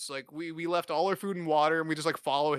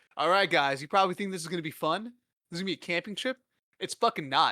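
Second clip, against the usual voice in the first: normal talking voice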